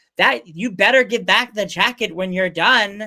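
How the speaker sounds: dainty and macho at once, manly yet dainty.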